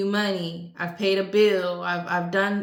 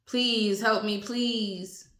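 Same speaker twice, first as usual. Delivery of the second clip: mock pleading, begging tone; 2 semitones higher, 3 dB quieter than usual. Retelling how an old lady pleads for help: imitating someone begging. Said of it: "now she begging".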